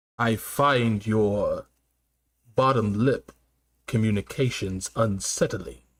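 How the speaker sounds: very deep, low, slow, deliberate put-on voice. Delivering a joke line about someone in a Darth Vader voice. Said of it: "I gotta say that shit with a Darth Vader voice".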